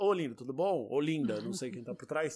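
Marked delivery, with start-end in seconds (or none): 0.0-0.9 put-on, mocking, teasing, derisive tone. Acting out a suggested phone call: put-on mocking tone. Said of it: "liga pro Haddad debochado e fala".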